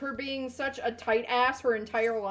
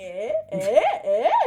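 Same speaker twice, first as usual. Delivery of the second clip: very high, loud, insistent, knowing, prodding eh; 12 semitones higher, 8 dB louder than usual. Retelling a visit where a friend's dad called them over: imitating a friend's dad. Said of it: "he looked at me and he was like".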